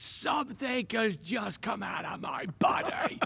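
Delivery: drawn-out startled scream. Retelling a man jumping in the air at his news: imitating someone screaming.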